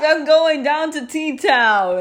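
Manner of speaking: talking through laughter. Talking about a town nicknamed T-Town, laughing while talking. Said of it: "Honey, stop laughing about this".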